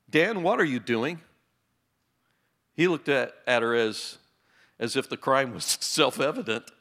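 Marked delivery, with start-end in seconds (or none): 0.1-1.2 put-on stern voice, pitched higher. Retelling Mom catching Dan tearing pages out of a book: retelling Mom's stern question. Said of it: "Mom said in a stern voice".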